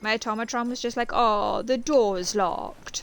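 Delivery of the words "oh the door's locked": put-on, slow, patronizing, talking-down tone. Retelling what the automatron just said: imitating a condescending tone. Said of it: "how frickin' condescending can you sound?".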